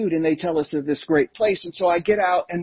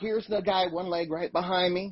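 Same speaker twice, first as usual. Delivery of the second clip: normal talking voice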